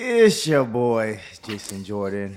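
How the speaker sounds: dropped, very low, slow, drawn-out voice. Introducing himself on the podcast: lowered voice. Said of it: "he started lowering his voice".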